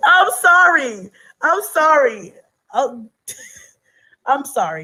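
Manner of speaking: very slow delivery, spoken through laughter. Apologizing to the other speaker for laughing at them, laughing while apologizing. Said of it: "I don't mean to laugh at you".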